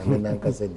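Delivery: ordinary delivery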